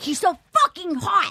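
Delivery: put-on angry, worked-up, high, furious outburst. Retelling what a woman told the speaker on walking in: imitating someone furious. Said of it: "she was furious".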